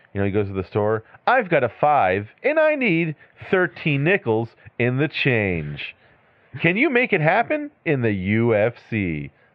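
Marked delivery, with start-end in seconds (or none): 1.2-9.2 very slow, swooping, pitched-up commercial announcer voice. Joking that guy should talk like his commercial everywhere, doing a commercial-announcer impression. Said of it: "he should walk around just like that everywhere".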